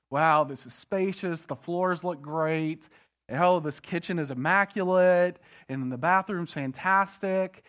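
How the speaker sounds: ordinary talk, nothing marked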